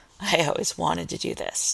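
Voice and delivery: hushed, breathy murmur, almost a whisper. A man speaks to his lover during sex, murmuring. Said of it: "Clint murmured".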